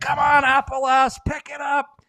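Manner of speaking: shrill, very loud, high-pitched yelling. Retelling a joke shouted from the back of the bus: imitating Pitter yelling. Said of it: "he's yelling at Appalass".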